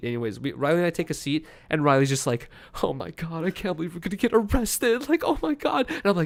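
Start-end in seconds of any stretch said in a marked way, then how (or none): 2.8-5.9 rising, high-pitched panic, close to tears. Retelling being held by airport police, imitating Riley freaking out. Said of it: "she's like freaking out, trying not to cry".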